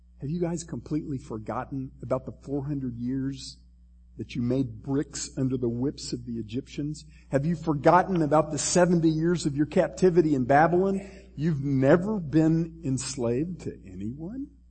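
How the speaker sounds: ordinary talk, nothing marked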